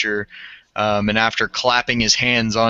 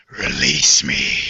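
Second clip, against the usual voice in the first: very deep, rasping, hoarse voice; 8 semitones lower than usual. Game master voicing a figure on its turn, in a raspy voice. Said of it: "you just hear this raspy voice".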